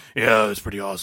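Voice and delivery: muffled put-on superhero voice. Speaker acts out Batman answering a friend about his new voice, Batman voice like marbles in mouth. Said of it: "Do you have marbles in your mouth?".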